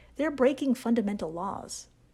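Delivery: normal talking voice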